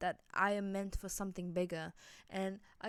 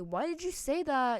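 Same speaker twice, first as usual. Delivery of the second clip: loud, shrill scream with an accusing tone; 5 semitones higher, 6 dB louder than usual. Retelling being confronted at home by mom: imitating mom screaming. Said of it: "she's screaming at me".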